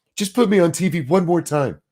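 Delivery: derisive mocking tone. Retelling how Crenshaw mocked others: imitating Crenshaw's mocking tone. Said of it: "he fucking mocking tones them".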